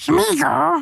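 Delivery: put-on very high, squeaky creature voice.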